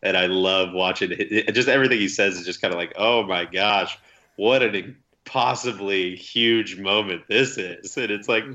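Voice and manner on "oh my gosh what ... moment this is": slow, overblown amazement, dripping with sarcasm. Imitating how he sounds in every call: imitating Joe Buck, dripping sarcasm. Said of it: "it's just all dripping with sarcasm".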